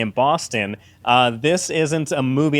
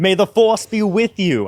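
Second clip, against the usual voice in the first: put-on Boston accent, pitched up; 6 semitones higher, 3 dB louder than usual. Retelling a movie where all characters have Boston accents: put-on Boston accent. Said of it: "all the characters have a Boston accent. So it's like".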